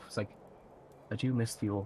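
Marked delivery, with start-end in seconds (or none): 1.1-1.9 quiet muttering under breath. Voicing a passing character, unaware she speaks aloud: muttering under her breath. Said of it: "you actually hear under her breath".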